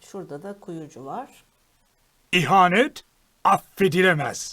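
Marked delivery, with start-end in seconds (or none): 2.3-4.5 very loud, menacing, threatening. A game character's voice line, threatening. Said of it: "Çok tehditkar".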